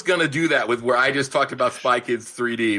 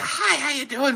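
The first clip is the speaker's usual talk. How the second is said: very high, squeezed, raspy voice; 14 semitones higher than usual. Mocking an actor's voice while discussing his movie: Ed Burns voice. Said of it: "Got, like, the, ... voice".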